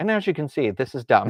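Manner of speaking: put-on heavy sarcastic narrator voice. Imitating the narrator of a textbook's DVD: imitating a sarcastic narrator. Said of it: "the narrator of this was so sarcastic".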